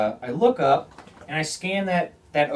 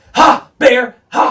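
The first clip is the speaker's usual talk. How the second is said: shrill, high, full-force loud yell; 10 semitones higher, 13 dB louder than usual. Retelling scaring off a bear with a pistol, screaming at the bear. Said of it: "I'm screaming at him".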